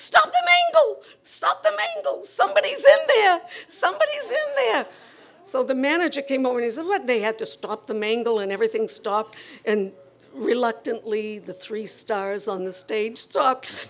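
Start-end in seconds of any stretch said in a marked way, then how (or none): 0.0-4.9 very high, loud, shrill screeching. Retelling a scene at the mangle, imitating Leanie Babes screeching. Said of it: "Leanie Babes started screeching".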